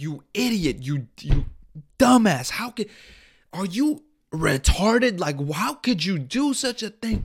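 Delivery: put-on furious scream. Retelling a man screaming at the speaker's 14-year-old friend, imitating his screaming. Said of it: "he's just screaming at my fucking 14-year-old friend".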